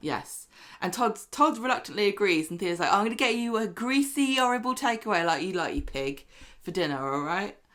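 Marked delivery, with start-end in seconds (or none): 2.9-7.5 put-on, faux cheerful tone. Retelling what a character said in an episode: imitating a faux cheerful tone. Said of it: "In a faux cheerful way".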